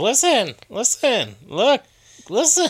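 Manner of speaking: very high, drawn-out, sing-song fairy voice. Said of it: "it just goes".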